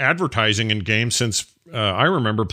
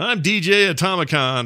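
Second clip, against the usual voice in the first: put-on old-style announcer voice, pitched higher; 6 semitones higher than usual. Recalling the old opener, imitating the old opener announcer. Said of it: "the opener used to be him going".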